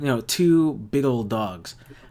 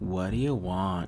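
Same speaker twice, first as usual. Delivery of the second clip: bored, unimpressed, dull, low, flat monotone; 5 semitones lower, 6 dB quieter than usual. Voicing an unfazed character answering visitors at her door; dull monotone voice. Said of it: "she speaks like in a dull, monotone voice".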